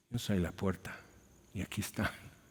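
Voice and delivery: acted, very soft, hushed, mournful little voice. Retelling a little voice heard while facing a wall, imitating a sad little voice. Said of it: "Pero tan triste que lo dice".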